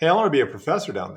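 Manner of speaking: a bit heated, flustered and irritated. Retelling a phone call to a department chair, retelling saying it kind of angry. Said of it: "I kind of said it kind of angry".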